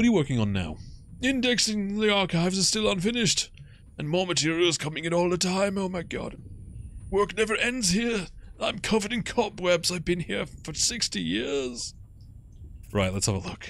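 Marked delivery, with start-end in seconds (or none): 1.2-11.9 put-on old man voice, much higher, slower. In a game, the archivist answers a question about his work, in an old guy voice. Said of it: "which means I need to do an old guy voice".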